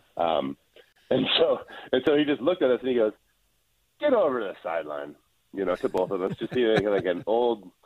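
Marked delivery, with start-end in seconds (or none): 4.0-5.1 put-on disgusted tone. Retelling how the coach sent them to the sideline: imitating a disgusted coach. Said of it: "disgusted by us".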